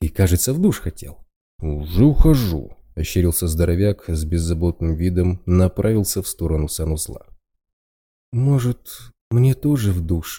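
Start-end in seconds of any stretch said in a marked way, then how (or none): 8.3-10.4 sleepy, half-awake mumble. Narrator reads a woman peeking out of her room: sleepy mumble. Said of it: "полусонно пробормотала Бэмби".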